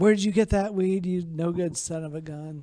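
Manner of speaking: mild, angry, scolding yell. Retelling a fight between his old lady and her boyfriend: imitating someone yelling. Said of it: "and she's yelling".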